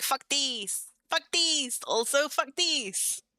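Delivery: very high, unhurried, stretched-out kitty voice. Retelling an impression of a pet cat knocking things over: imitating my cat. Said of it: "doing my impression of my cat being like".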